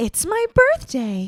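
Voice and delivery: high, swooping, sing-song toy doll voice, drawn out. Showing off impressions, doing a Barbie impression. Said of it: "I'm so good at Barbie impressions".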